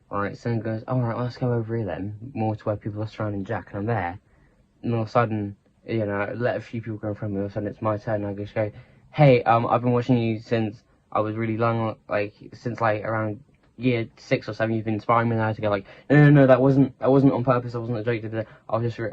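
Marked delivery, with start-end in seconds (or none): none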